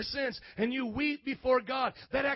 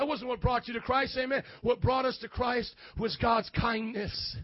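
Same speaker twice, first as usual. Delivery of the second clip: normal talking voice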